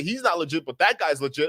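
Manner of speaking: ordinary delivery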